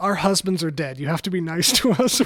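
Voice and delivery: very loud, booming full-volume shout. Retelling a friend heckling a comedian in a concert hall: imitating a loud yell. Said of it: "really loud in the middle of the concert hall".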